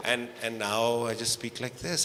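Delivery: slow, deliberate, even-paced speaking.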